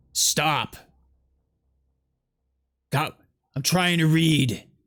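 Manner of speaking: rough, gruff-sounding delivery. Narrator voices a figure heard down the hallway, in a gruff voice. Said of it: "a gruff voice".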